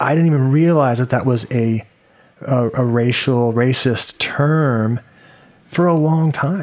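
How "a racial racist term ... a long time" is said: normal talking voice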